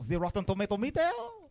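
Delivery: put-on high, quick French accent.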